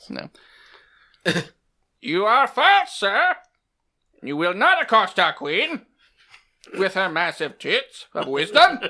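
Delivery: put-on character voice, high and swooping. Told to act out how they responded, speaker does a put-on aunt voice. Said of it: "do it in your aunt voice".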